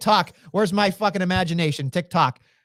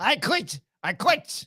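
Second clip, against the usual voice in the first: put-on clumsy high Irish accent; 5 semitones higher, 3 dB quieter than usual. Guessing on the fly how Finn would quit, do a bad Irish Finn impression. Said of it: "in that Irish uh, uh, version".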